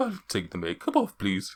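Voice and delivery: loud, sing-song, fully put-on Welsh accent. Voicing a character asking to have his goth makeup removed: welsh accent. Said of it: "Is he Welsh now?".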